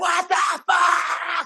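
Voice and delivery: put-on very high, furious, worked-up shrieking scream. Retelling bursting in on a kid bothering the dog: retelling own screaming. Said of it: "coming in the room screaming or fucking yelling".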